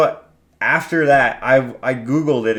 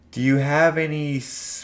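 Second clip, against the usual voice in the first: eerie, unsettling, ominous cartoon character voice; 3 semitones higher, 5 dB quieter than usual. Imitating a green cartoon character with long fingers: weird ominous voice. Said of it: "this weird, ominous voice".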